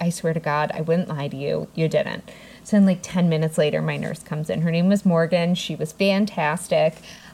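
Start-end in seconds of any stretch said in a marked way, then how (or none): none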